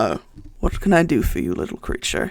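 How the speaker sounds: deep-voiced delivery. Retelling how he spoke without turning to look, in a loud deep voice. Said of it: "his loud kind of uh deep voice kind of goes".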